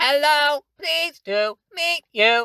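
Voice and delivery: tiny, silly, very high, squeaky robot voice. Showing a high pitch for a silly little robot: very high-pitched little robot voice. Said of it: "somewhere way up high".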